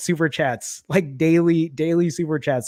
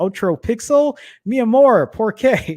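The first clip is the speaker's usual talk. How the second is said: amateur put-on Spanish accent, slow and high; 6 semitones higher, 4 dB louder than usual. Imitating his wife's reaction to buying another phone, attempted Spanish accent. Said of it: "try to do it in a Spanish accent".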